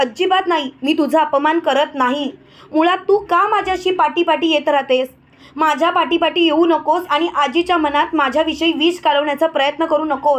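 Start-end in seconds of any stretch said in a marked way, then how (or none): none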